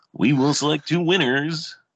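high, loud radio announcer voice. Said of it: "bring back my radio voice for just one time".

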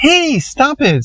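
shrill, very high-pitched little yelp. Narrator reads a girl whose classmate squirted juice on her shirt: yelping. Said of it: "Susanna yelped".

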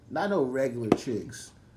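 plain

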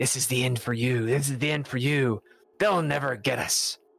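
gnarly, villainous voice. Narrator reading a story aloud, voicing the Hemlock Hoodlum: gnarly Hemlock Hoodlum voice. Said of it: "the Hemlock Hoodlum's gnarly voice saying".

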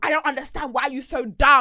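loud shout. Retelling a passenger shouting at a driver: imitating a girl shouting. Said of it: "The girl's now shouting at him".

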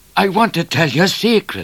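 breathless, high, gasping through laughter. A bushranger with a pistol tells Midnight a secret, gasped. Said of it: "gasped the bushranger".

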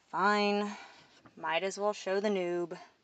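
plain

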